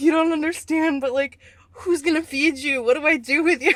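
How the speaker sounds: tearful voice. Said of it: "and I'm crying".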